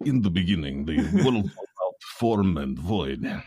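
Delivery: put-on Russian-accented English. Joking that the red letter Bible version is read in a Russian accent. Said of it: "done uh, in a Russian accent".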